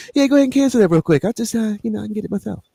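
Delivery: very high voice, words rattled off fast. Mimicking how SB sounds when overheard talking, imitating SB's soft voice. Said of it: "SB got that soft voice".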